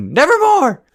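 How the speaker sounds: high-pitched, loud yell. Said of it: "she could have done is just yell at you".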